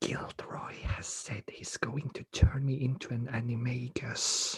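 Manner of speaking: secretive, hushed, leaning-in whisper. Voicing a nervous student leaning in to share a secret: whispering in character. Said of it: "he leans in and sort of whisper".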